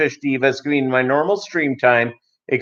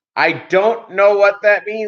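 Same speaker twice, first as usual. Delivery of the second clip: put-on yelling, pitched much higher; 7 semitones higher than usual. Telling about ordering food, the speaker retells the man who yelled at them, retelling his yell. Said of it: "he yelled at me".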